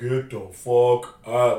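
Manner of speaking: very slow, drawn-out slow-motion voice. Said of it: "they do it in slow motion".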